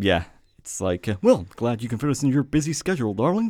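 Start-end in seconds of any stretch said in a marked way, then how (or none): 1.2-3.5 animated, pitched-up, swinging cartoon voice. Quoting a film character's line from the movie: Homer Simpson voice. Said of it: "Was he Homer Simpson?".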